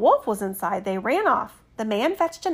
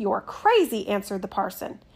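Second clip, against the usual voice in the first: ordinary delivery, nothing marked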